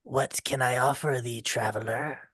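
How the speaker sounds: deep, hushed voice. Narrating to a player, a figure nearing the shore speaks: deep voice. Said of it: "she says out to you in a um in a deep voice".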